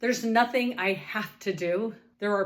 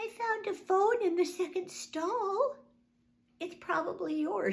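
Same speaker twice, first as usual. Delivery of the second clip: meek, small, high and soft mouse-like voice; 10 semitones higher, 5 dB quieter than usual. Retelling a woman in a bathroom stall answering about a phone, mousy little female voice. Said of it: "a mousy little female voice said".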